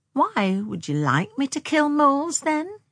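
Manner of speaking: hesitant, tentative, slightly high voice. Narrator reads a woman asking a man a question after an awkward pause; tentative. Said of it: "she asked tentatively".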